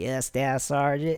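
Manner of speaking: put-on a touch of country-boy accent. Retelling his driver's reply to him, in a slight country-boy accent. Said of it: "a little accent, you know, country boy".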